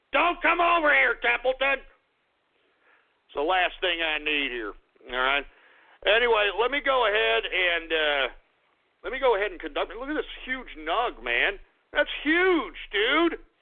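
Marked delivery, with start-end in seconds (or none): 9.9-13.3 laid-back, relaxed stoner voice. Joking around, the speaker slips into a stoner act; stoner voice. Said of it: "Now I'm talking like a freaking stoner now".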